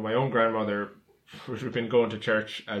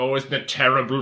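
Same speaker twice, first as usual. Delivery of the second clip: put-on Irish accent, higher and louder; 3 semitones higher, 6 dB louder than usual. Quoting a tv character's father: imitating an irish accent. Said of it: "what an Irish person would be like".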